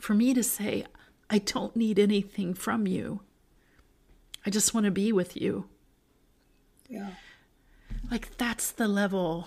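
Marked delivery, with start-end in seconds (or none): 0.0-5.7 voice catching, choked up, close to crying. Talking about wanting closeness with Jesus, speaking close to crying. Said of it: "I feel like I'm going to cry".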